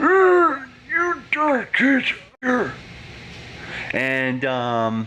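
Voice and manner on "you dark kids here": put-on very high, very slow elderly old man voice. Showing off impressions, doing an old man voice. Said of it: "I could do an old man voice".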